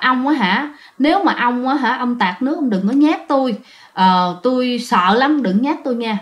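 ordinary talk

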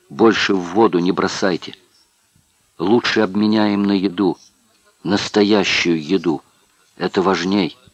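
plain reading voice

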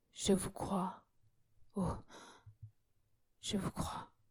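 faltering, voice breaking. A weeping woman tells another woman she believes her, stammering in a broken voice. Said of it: "bégaya-t-elle d'une voix brisée".

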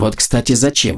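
irritable, annoyed, irritated tone. Katarina questions Nika, irritated. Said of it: "раздраженно спросила Катарина".

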